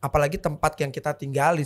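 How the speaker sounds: ordinary talk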